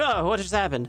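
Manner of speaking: bewildered machine voice, caught off guard. Playing a game and acting out the lagging game: voicing the confused game. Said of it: "has to take a second to be like".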